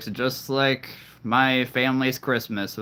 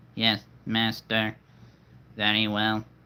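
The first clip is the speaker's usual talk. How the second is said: put-on robot character voice. Asking which voice to do next, then speaking as a little robot: put-on robot voice. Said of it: "that's my little robot".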